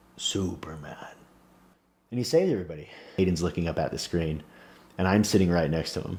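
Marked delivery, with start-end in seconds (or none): 0.2-1.0 slow, deliberate, unhurried, drawn-out single word. Retelling a film scene where the giant flies at the missile: slow delivery imitating the Iron Giant. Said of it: "and says slowly".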